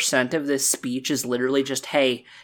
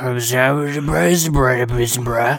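put-on drunk old-man voice, louder; 6 dB louder than usual. Describing what a character in Limsa says, imitating a drunk old man. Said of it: "like a drunk old man going".

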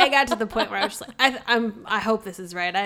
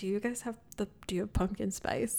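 quiet, fast muttering under breath; 12 dB quieter than usual. Retelling ordering a latte at the counter, muttering under breath. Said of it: "I was like under my breath".

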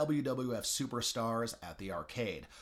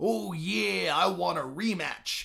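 rough, slow put-on impersonation voice; 6 semitones higher, 6 dB louder than usual. Quoting a robed figure at the end of an ad, Macho Man Randy Savage impression. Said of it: "what I just did is about as good an impression of Macho Man Randy Savage as you would hear in the advertisement".

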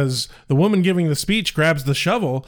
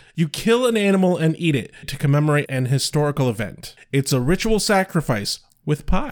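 plain

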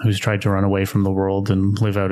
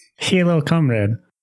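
pitched-up, put-on Russian woman's accent; 8 semitones higher than usual. Playing a russian woman who greets guests at the bar: put-on female russian accent. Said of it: "you got to do that voice".

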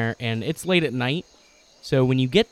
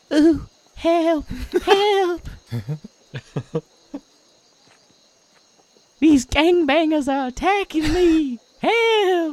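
put-on very high, shrill little old lady voice crying out; 4 dB louder than usual. Game master voicing a distraction noise of an old lady being attacked, shrill old lady cries. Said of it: "you hear the shrill cries of".

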